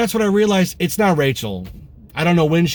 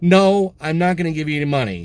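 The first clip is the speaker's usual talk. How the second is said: nice, polite yet firm tone. Retelling refusing a man on the subway who asked for money, nice, firm voice. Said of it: "And I did it in a nice, firm voice".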